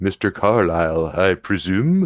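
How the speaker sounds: put-on slow, older gentleman's voice. Narrator voices a man inside a car greeting Mr. Carlyle: older gentleman voice. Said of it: "A voice from inside sounds like an older gentleman".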